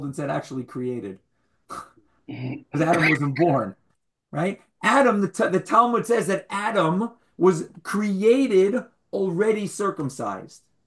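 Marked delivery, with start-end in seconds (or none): 0.3-1.2 low, soft mumble. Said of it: "And then I mumbled and said".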